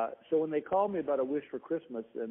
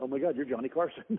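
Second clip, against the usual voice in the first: mock starstruck kid-like gushing. Recalling meeting a star in the dressing room, retelling a starstruck kid-like gush. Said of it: "I'm like a little kid going".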